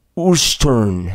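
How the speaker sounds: put-on strong, thick Colombian accent. Recalling how the speaker's father answered where they lived, in a thick Colombian accent. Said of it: "his thick Colombian, well, you know, uh, accent".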